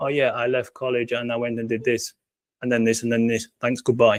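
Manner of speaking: mechanical, flat robotic monotone. Showing how reading out bullet points would sound, in a robotic voice. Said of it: "like in a robotic voice".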